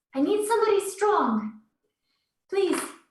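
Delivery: very high-pitched calling character voice. Voicing Susan dragging heavy furniture in a side room: Susan character voice. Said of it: "she kind of pops her head around the corner".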